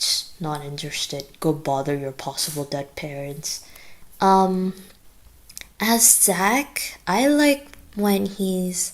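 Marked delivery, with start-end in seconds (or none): 0.0-3.7 cutting, dismissive, insulting tone. Quoting a favorite line as James, insulting Gregory: insulting line as James. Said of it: "insulting Gregory with one of these".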